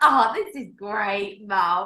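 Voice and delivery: very slow, blissful, delighted dog voice. Voicing the grinning dog with head cocked: voicing the dog, delighted. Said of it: "tongue hanging out ... his head cocked like".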